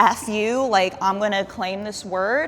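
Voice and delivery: ordinary talk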